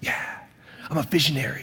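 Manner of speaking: put-on whispered, breathy young man's voice. Retelling what a young man says to the pastor: imitating a young man. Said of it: "you gotta say it like this?".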